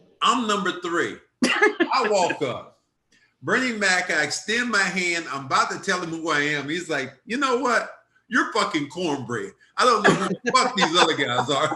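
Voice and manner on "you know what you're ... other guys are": mock, no-filter, brutally honest bluntness. Retelling what Bernie Mac said on meeting him: imitating Bernie Mac, brutally honest. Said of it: "so brutally honest the way he said it".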